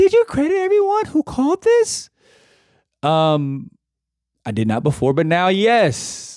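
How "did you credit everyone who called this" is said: put-on, very high girly voice. Switching into a put-on girly girl voice for one quick line. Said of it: "to like a girly girl voice".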